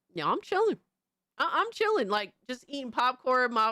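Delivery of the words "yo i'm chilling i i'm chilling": pitched-up, swooping computer processor voice. Comparing computer parts, speaking as the processor. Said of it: "my processor just like".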